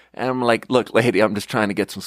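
ordinary delivery

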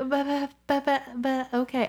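high, very slow, drawn-out babbling, holding back tears. Retelling own reaction to advice about homework: imitating fighting back tears. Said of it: "fighting the tears back".

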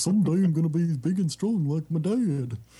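silly, high-pitched cartoon dog voice. A speaker recalls how Godzilla's son talked in a movie, doing a Goofy voice. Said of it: "Godzilla's son kind of talked like Goofy".

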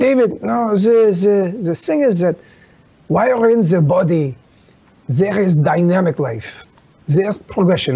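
put-on French accent throughout. Retelling what a teacher said in reply to a question: imitating a French accent. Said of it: "he has this French accent".

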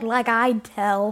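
put-on sassy little-girl voice. Retelling a child actor's line in a movie: imitating a sassy little girl. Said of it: "Her delivery on these lines is kinda sassy".

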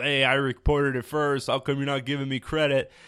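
ordinary delivery

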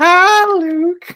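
put-on very high, loud old-man voice on high notes. Joking with the other podcast hosts, one speaker does a Family Guy old man voice. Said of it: "you have the voice better than me".

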